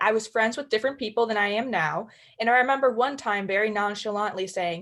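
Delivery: normal talking voice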